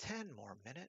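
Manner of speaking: hushed, very soft, calming, soothing lull. Recall the man who never pluralized anything, imitating a really soft, soothing voice. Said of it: "in this really soft, soothing voice".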